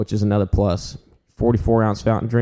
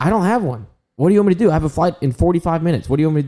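high-pitched, acted-out yelling; 7 semitones higher than usual. Retelling an angry traveler at airport security: imitating someone yelling. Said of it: "yelling at this dude".

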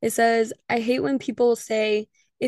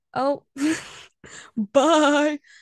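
goat-like bleating voice, higher pitch, dry throat; 4 semitones higher than usual. Signing off an episode to listeners, goat-like voice. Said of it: "I sounded like a goat. My throat is dry".

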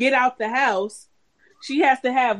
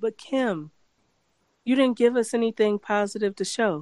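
tone full of care and concern; 2 semitones lower than usual. Retelling what the host said to Kim: imitating caring, concerned tone. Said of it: "he said it with so much care and concern".

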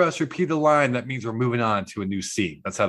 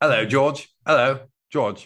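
put-on fake British accent. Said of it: "a whole episode of British accents".

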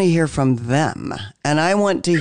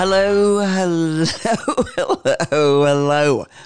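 slow words broken up by laughter. Opening the episode with a greeting: laughing while talking. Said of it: "I'm laughing because I'm here with".

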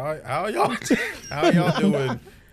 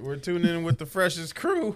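cracking voice, higher pitch; 4 semitones higher than usual. Introducing the podcast to listeners, voice cracking. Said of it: "He's going through puberty".

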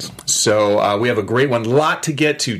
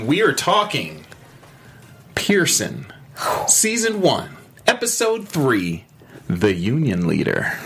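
slow, deliberate, measured host-style delivery; 2 semitones higher than usual. A show host introducing the episode being discussed, with a slow delivery. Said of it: "You see how I said that with my voice? Like, I keep it slow".

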